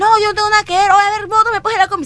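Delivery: high, loud, defiant, indignant delivery.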